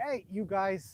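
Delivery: loud, drawn-out calling out.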